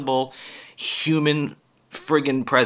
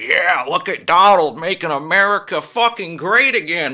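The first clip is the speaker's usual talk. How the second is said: eager, fired-up, excited fan cheering; 4 semitones higher, 4 dB louder than usual. Mimicking people who get excited at a rally: imitating an excited supporter. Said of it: "get excited when he's up on a stage".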